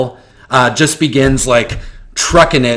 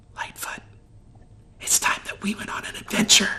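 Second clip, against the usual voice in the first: breathy, very quiet, hushed whisper; 8 semitones higher, 12 dB quieter than usual. Grabbing the player's character by the arm, a shrunken figure whispers into their ear. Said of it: "he whispers into your ear".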